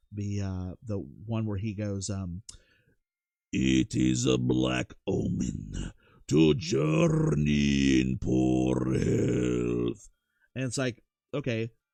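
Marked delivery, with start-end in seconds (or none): 3.5-10.1 loud, creaky, rough, swooping, drawn-out vampire voice. Speaker showing the voice everybody did last year, Nosferatu voice. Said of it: "everybody was doing the Nosferatu voice".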